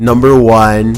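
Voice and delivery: deep, low, loud announcer voice.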